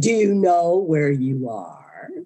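ominous, spooky, eerie, creepy mock menace. Retelling a voice that came out of the fog: imitating a creepy voice. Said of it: "Was it all creepy like that?".

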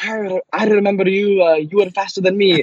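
high, bad Scottish accent.

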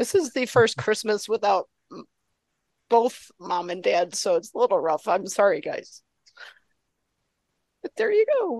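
emotional, choking up, pitch swinging, barely holding together. Speaker tells viewers of the first christmas without mom and dad: emotional, holding back. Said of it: "get myself together".

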